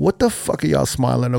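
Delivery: put-on gruff, bitter, hostile tone in a New York accent. Retelling how the crowd reacted to the smiling DJs: imitating a bitter New York reaction. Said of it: "the instant New York reaction was".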